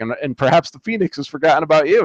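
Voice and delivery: scornful, sarcastic, mocking tone. Retelling Namor laughing at Jean's hope: sarcastic Namor quote. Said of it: "they're all sarcastic and being a dick".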